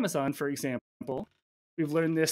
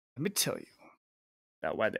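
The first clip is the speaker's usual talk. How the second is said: seductive, sultry, breathy near-whisper; 5 semitones lower, 6 dB quieter than usual. Starting story time about the Federal Trade Commission, in a sultry voice. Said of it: "in a sultry voice".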